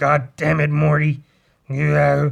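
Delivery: rough, gravel-edged voice pushed out loud. Describing a soundboard app of own voice, doing a gravelly Rick voice. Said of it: "I make my voice go gravelly. To talk like Rick".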